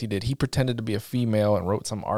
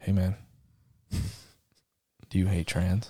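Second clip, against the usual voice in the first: put-on whisper; 3 semitones lower than usual. Describing somebody speaking up while you relax alone in a sauna: retelling a whisper. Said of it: "somebody just whispers".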